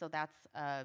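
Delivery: plain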